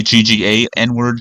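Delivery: ordinary delivery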